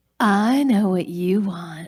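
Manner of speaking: mock-flirtatious commercial-style tone. Recalling a cringy ice cream commercial they acted in: mock-flirty commercial voice. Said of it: "flirting about ice cream".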